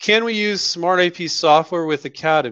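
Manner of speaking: ordinary talk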